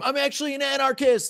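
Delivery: very high, loud shrieking scream. Player describes his character's move during a game, screaming. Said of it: "And then I scream".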